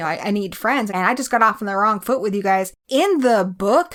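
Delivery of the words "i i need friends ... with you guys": usual speaking voice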